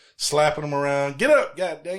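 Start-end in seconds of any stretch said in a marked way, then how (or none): 1.2-2.0 loud, high-pitched, hollering, scolding mother voice. Retelling a movie scene where a mama wakes her son: imitating a mama hollering. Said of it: "getting hollered at by their mamas".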